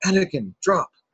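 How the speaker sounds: high, loud, sharp calling out. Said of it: "when Qui-Gon's like".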